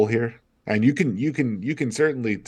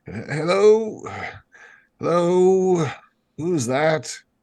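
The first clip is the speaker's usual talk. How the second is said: put-on high, querulous old man voice, calling out; 8 semitones higher than usual. A man looks out at the carriage and calls out: old querulous voice. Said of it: "this old querulous voice".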